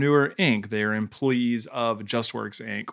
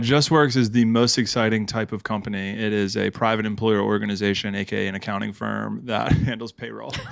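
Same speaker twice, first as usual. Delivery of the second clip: ordinary talk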